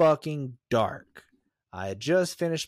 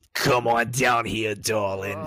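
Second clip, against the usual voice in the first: put-on low old barfly woman voice; 4 semitones lower than usual. Describing an old woman at the end of a smoking bar, imitating how she calls over. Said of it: "like some old bitch at the end of the bar, and one of the bars that still let you smoke".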